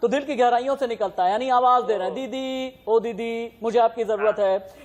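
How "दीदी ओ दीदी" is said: long, stretched-out, drawn-out दीदी. Showing how दीदी is called out in a long voice: drawn-out call 'दीदी'. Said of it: "दीदी अगर लंबी आवाज में कहा जाता है ना ... इस तरह से आवाज दी".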